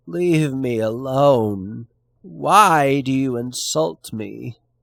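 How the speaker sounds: odd, slow outburst with drawn-out "why". A narrator reads a clerk's protest to those teasing him at work, exclaiming in a strange voice. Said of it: "always the letter-copying clerk, / short of stature, somewhat pockmarked, red-haired and mole-eyed, with a bald forehead, / But [name] answered not a word, / And there was something strange in the wor".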